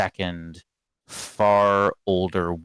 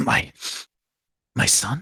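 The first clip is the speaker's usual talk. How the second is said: croaking, stumbling voice, badly shaken; 7 semitones higher than usual. Storyteller voicing Rudolf Van Richten as he hears about his son, croaking. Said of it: "He croaks".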